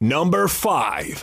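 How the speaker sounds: big, deep put-on voice. Reading out a number on request, in a big, deep put-on voice. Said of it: "did you want to give me the big, deep voice? Yeah".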